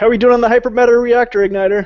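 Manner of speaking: high, loud yell that carries far. Checking in by calling back to Lorik: yelling back. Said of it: "I'm gonna yell back there to Lorik".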